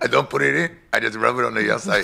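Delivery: heavy-handed put-on comic Spanish accent. Repeating a joke line about rubbing it on the outside: Spanish accent. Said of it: "That's the best Spanish accent I've ever done".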